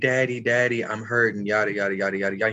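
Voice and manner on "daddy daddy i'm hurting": put-on crying, tearful little girl voice, crying out. Retelling a daughter crying after scraping her knee: imitating a crying daughter. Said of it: "And she's crying".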